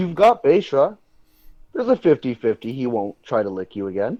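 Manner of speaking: needling, snarky, swooping sarcastic tone. Character turning to a companion about leaving, in a snarky tone. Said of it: "in a kind of snarky tone and go".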